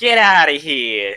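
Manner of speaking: put-on New Jersey accent. Joking around with others, doing a new jersey accent. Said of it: "Let's do a New Jersey accent".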